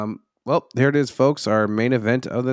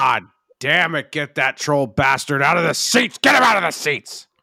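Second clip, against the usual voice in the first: frantic, out-of-control yelling; 4 semitones higher, 4 dB louder than usual. Imitating the boss yelling during the show: impression of Vince yelling. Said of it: "that was a really good impression".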